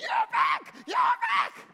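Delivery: very high, sing-song, swooping cheering shout. Storyteller acts out the 200 who stayed greeting the returning fighters: retelling a crowd shouting. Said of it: "the 200 started shouting".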